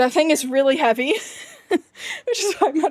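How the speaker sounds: loud, out of breath, with a laugh.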